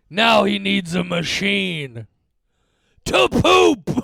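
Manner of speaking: slow, deliberate, loud, swooping, drawn-out delivery. Quoting a remembered TV line, impersonating Mister Fishladder. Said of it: "I'm gonna do my best possible impersonation".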